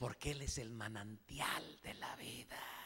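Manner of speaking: soft, breathy, reverent whisper full of awe.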